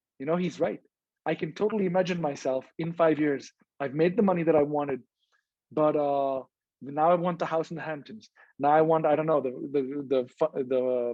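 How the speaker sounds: usual speaking voice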